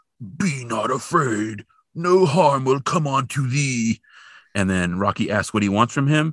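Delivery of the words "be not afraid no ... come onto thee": put-on alien voice, slow, high, drawn out. Retelling a story, voicing the alien at Rocky's window in an alien voice. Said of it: "you get an idea of the voice of the alien".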